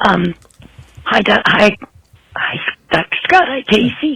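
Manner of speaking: under-the-weather, stuffy, congested voice. A caller greets the show's doctors while sick, in a voice with a cold. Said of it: "Pardon my voice. I've got a cold".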